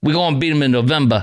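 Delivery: put-on Detroit accent, like a local. Repeating a played line back, imitating a Motor City accent. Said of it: "Is that the Motor City accent?".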